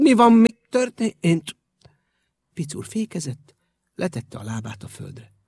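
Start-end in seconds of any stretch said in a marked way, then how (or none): 0.0-1.6 high, slow speech through chattering teeth. Narrator reads a character asking while the bicycle jolts hard; teeth chattering. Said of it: "fogvacogva kérdezte".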